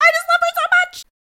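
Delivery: very high squeaking voice. Retelling a scene where a man cries over Katya: imitating a squeaky voice. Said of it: "He is squeaking".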